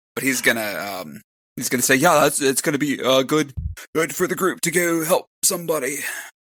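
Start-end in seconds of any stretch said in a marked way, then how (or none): 2.0-6.0 trembling voice, near tears, pitched up. The speaker voices Donar, shaken and near tears, speaking to the group: shaky voice. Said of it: "his voice is shaky and his hands are shaking".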